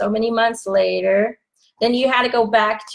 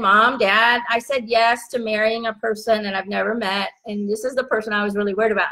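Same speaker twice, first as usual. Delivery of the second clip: ordinary talk, nothing marked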